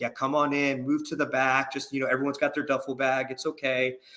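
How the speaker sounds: put-on nice drill sergeant voice, kind and welcoming. Retelling how a drill sergeant greeted arriving soldiers, imitating a nice drill sergeant. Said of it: "the drill sergeant was so nice to us".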